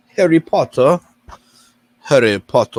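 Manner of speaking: loud put-on British accent. Searching for a title, saying it the British way: put-on British accent.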